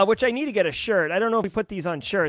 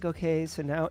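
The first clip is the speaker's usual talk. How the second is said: put-on soothing instructor voice, quieter; 7 dB quieter than usual. Imitating a course instructor's delivery: soothing Heath Adams voice. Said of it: "soothing, mollifying voice".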